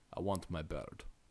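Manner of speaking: very quiet, heavy, big burly Russian accent. Quoting a line from a movie, in a big, burly russian accent. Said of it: "Think of it with a big, burly Russian accent".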